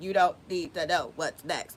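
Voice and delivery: low, mechanical robot voice. Retelling what a voice said after clicking the mouse, in a robotic voice. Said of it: "And it was robotic like that".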